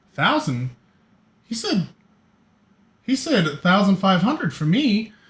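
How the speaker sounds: perked-up, interested. Voicing a tiefling hearing about payment: perking up with interest. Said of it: "The tiefling just kind of perks up".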